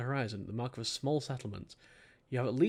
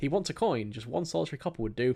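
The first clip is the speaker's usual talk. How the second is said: usual speaking voice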